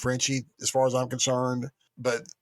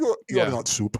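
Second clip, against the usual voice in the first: put-on Russian-ish accent, raised pitch; 6 semitones higher than usual. Repeating a line just heard, imitating a Russian accent. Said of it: "I'm assuming it's Russian or Russian-ish".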